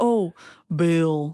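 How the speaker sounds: put-on Midwestern American accent. Quoting a film villain faking an accent: Alan Rickman's fake Midwestern accent. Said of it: "when Alan Rickman puts on the fake, um, like, Midwestern accent".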